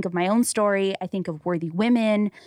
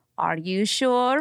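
put-on mimicked Middle Eastern accent; 3 semitones higher than usual. Retelling an Uber driver's questions from the back seat: imitating driver's Middle Eastern accent. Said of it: "I can't even do the accent now".

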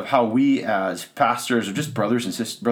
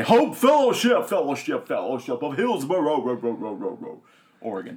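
arena sports announcer voice; 2 semitones higher than usual. A host demonstrates how he announces his fellowship's name, channeling an announcer. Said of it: "I'm channeling my inner announcer".

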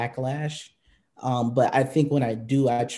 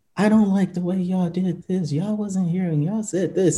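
put-on, high-pitched yelling; 6 semitones higher than usual. Retelling a protester interrupting a stand-up on a hill, imitating a protester yelling. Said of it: "And she's like yelling".

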